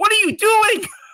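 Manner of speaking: mock, very high-pitched screaming outburst. Retelling screaming at a player who scored: retelling own screaming. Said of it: "I was screaming, like".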